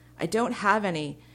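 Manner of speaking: frantic, alarmed, loud, panicked cry. Tara, told by Prin to shoot up as the ground shakes, panicked. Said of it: "Tara said in a panic".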